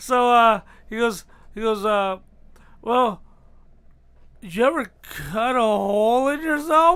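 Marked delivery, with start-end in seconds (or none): 2.8-7.0 mock shaky, frightened voice. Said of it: "a very shaky voice on the other end".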